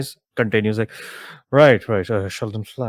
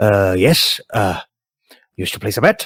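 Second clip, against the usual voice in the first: put-on raised-pitch elderly cat creature character voice; 5 dB louder than usual. Voicing an older tabaxi who greets a player at the betting desk: older tabaxi bookie voice. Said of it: "tabaxi who".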